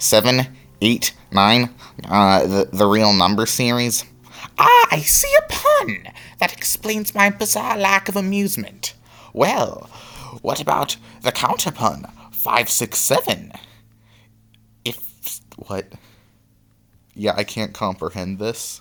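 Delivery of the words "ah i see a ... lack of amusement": very high, over-animated character voice swinging wildly in pitch. Reading game dialogue aloud in an interview scene: Papyrus voice. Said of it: "Sans and Papyrus are really the only characters who I have a good voice for".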